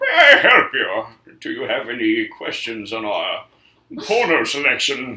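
swooping, muffled villain voice as if through mask. Imagining Bane standing right behind you and speaking, Bane voice. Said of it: "you had Bane, ... be like".

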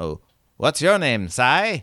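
put-on battered old robot voice, quaint, swooping, sing-song lilt. A game master voices the robot Crandall asking a player's name, in Crandall's quaint dialect voice.

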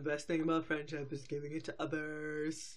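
goofy, dim-witted, low, dopey voice. Reading out a cartoon's lesson letter: dopey voice. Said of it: "I have to do my, my dopey voice".

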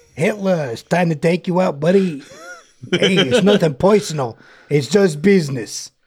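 put-on superhero voice with Brooklyn accent. Acting out a Captain America scene for the other speaker, in a Captain America Brooklyn accent. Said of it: "he sounds like he's actually from Brooklyn?".

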